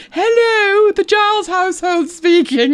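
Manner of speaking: very high, posh telephone voice. Retelling a phone call home, speaker imitates Mum answering: Hyacinth Bouquet telephone voice. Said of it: "Do you remember the telephone voice of the 80s?".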